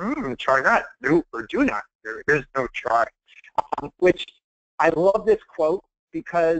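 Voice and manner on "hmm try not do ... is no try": character voice, swooping and sing-song. Finishing a talk by quoting a favorite line: Yoda voice. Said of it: "in my Yoda voice".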